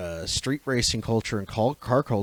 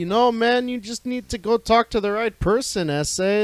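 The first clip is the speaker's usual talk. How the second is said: put-on Mexican Canadian accent, pitched very high; 11 semitones higher than usual. Imitating a street racing game character: put-on Mexican Canadian accent. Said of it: "Mexican Canadian, I made him sound like".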